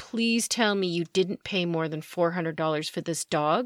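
ordinary talk

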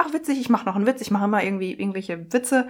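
normal talking voice

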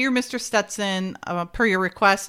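ordinary delivery

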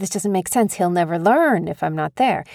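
ordinary talk, nothing marked

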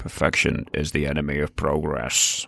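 grand, stately, statesman-like voice. Quoting a famous saying about perfection: Winston Churchill voice. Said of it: "I love the Winston voice".

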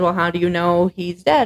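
ordinary talk

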